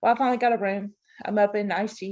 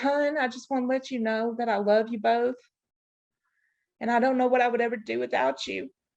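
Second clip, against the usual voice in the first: put-on tearful weeping through the words; 3 semitones higher than usual. Retelling a crying caller's words before a ventilator: imitating someone crying. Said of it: "and he's crying".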